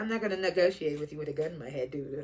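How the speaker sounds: put-on, very quiet, low, smooth delivery. Speaker acts out a line another man says, imitating a smooth delivery. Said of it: "trying to say it all smooth".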